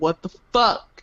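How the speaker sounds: whispered muttering under breath. Peeking around a corner at another vampire: whispered curse under breath. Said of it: "whisper some curses under my breath".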